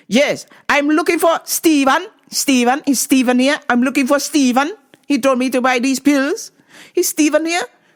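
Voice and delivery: put-on angry, demanding, high-pitched Jamaican woman's accent. Retelling a customer who approached the speaker, imitating an angry Jamaican lady. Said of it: "The angry Jamaican lady found me".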